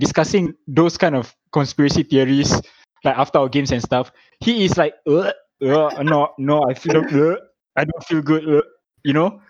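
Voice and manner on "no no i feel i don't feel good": slow, halting, queasy gagging voice, acted out. Imitating Rahim retching after their games: imitating Rahim retching. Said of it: "He's, like, retching".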